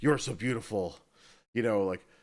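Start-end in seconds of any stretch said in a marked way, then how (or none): 0.0-1.0 mock dramatic intense voice. Imitating a game character gazing into a puddle: Nicolas Cage impression. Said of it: "doing a Nicolas Cage impression".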